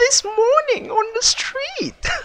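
very high, squeaky bad cartoon voice. Speaker imitates a cartoon character, Pops voice from Regular Show. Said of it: "I'm trying to imitate their voice".

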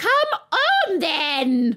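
bellowing, high, loud royal roar. Narrator reads the queen ordering a girl to join the procession, roaring. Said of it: "roared the queen".

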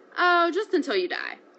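loud, very high, breezily cheerful. Reading the myth, King Minos answers Daedalus's question, cheerfully. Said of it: "replied Minos cheerfully".

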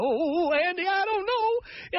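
quivering voice, very high and slow. Mocking an indecisive caller as quivering: quivering Don Knotts voice. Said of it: "quivering like Don Knotts on the Andy Griffith Show".

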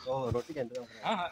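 low, slow, very soft murmur.

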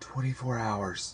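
murmuring under the breath. Reading a tearful first-person narrator answering a question, murmured. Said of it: "I murmured".

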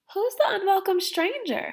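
very high, anxious, nervous tone. The narrator asks Grandfather a question in the story, asking nervously. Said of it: "I nervously asked".

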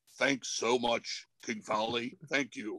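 very low, slow, grave, earnest tone. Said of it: "the [name] serious tone".

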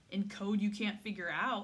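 dismissive, scornful tone. Natalie retorts to Emma about their mother's letter, scornful. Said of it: "Natalie said scornfully".

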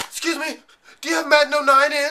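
high-pitched, desperate voice. At work, retelling a customer's phone call about Madden 09, imitating a desperate caller. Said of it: "The desperate sound of their voice".

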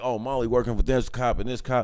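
usual speaking voice

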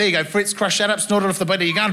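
ordinary talk

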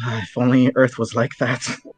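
hushed, muttered whisper under breath. After praising how everyone here is equal, the speaker adds an aside, whispering under breath. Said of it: "As I whisper under my breath".

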